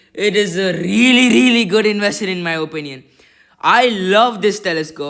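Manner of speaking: thrilled, loud, excited screaming. Showing off a new telescope on camera, excited screaming. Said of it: "I'm sorry if I'm screaming because I love it so much".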